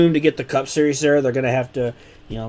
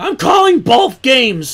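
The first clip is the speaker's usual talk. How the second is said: voice cracking, breaking very high in mid-word; 11 semitones higher, 6 dB louder than usual. Commentating on a race for his audience: voice cracking. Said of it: "Wow, my voice cracked".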